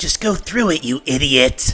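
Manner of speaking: distant offstage voice from the back, commanding. Voicing an unseen boss ordering a guard forward: unseen boss shouting an order. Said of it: "you hear a voice from the back here that you can't see say".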